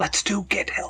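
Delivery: whispering. A player's character leans down close to someone and speaks, whispering. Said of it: "I'll whisper to him".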